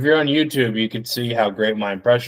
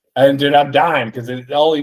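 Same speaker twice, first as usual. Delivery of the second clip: normal talking voice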